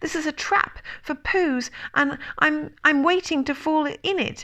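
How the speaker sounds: quick, squeaky, high little voice in a rush. A narrator reads the unsettled Piglet's reply, very quickly and squeakily. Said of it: "he said very quickly and squeakily".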